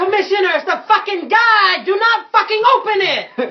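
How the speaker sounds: high, loud, frantic yell. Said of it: "I yell out".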